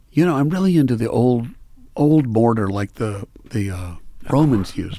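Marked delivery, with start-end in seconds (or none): none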